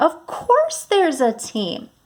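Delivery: lively, enthusiastic, excited, high and sing-song. Reading a sentence that ends in an exclamation point: excited voice. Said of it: "I changed my voice to sound excited".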